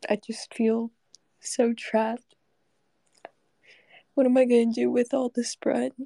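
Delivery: emotional, overcome, tearful tone. In a comic bit, getting emotional. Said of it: "Can't believe I'm getting emotional about bread".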